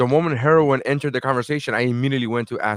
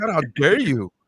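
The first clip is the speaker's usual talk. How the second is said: mock affronted, how-dare-you tone; 4 semitones higher than usual. Retelling how the other person answered being asked if they're high: mock-offended reply. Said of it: "You said it you said it like".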